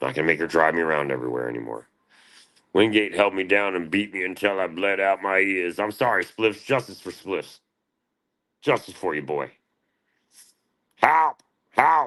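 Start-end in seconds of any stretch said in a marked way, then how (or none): 11.0-12.1 put-on little robot voice, higher and louder. Yelling for help like the little robot: Abe's Oddworld robot voice. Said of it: "That was Abe's Oddworld".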